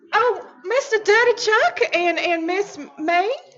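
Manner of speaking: hollering as loud as possible, loud and drawn out. A character calls over to two others about a find, shouting as loud as possible. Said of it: "raise my voice as loud as I can".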